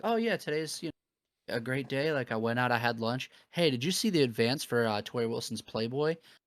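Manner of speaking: casual, relaxed conversational chatter like small talk. Retelling an announcer's question to a co-announcer: imitating Jim Ross, casual conversational. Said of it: "in the most, like, conversational way".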